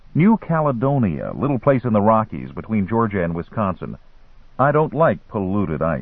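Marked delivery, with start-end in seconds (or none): none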